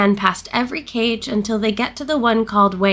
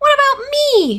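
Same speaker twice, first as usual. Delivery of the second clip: very high, loud, squeaky, raised voice; 5 dB louder than usual. Reading Piglet's question to the author, in a squeaky Piglet voice. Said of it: "said in his squeaky voice".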